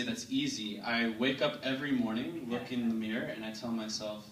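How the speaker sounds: ordinary talk, nothing marked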